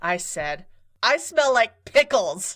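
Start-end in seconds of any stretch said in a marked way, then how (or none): 1.0-2.6 put-on, unthinking blurted remark, pitched up. Speaker retells blurting out between pieces at a performance, in a loud voice. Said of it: "in a loud voice".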